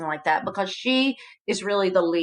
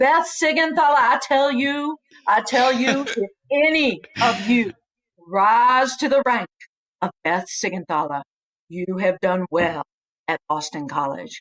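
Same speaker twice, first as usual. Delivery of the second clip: put-on Kentucky accent; 3 semitones higher, 3 dB louder than usual. Retelling how he addressed the class after roll call, imitating a Kentucky accent. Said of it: "had never lost his Kentucky accent".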